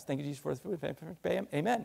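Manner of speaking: quick, rote delivery. Showing a mealtime prayer said a hundred times, rattled off fast. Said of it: "you can say it pretty fast".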